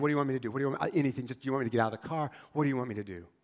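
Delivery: acted shaking, terrified voice. Retelling a young man pulled over, pleading with a police officer, voice shaking. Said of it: "his voice was shaking".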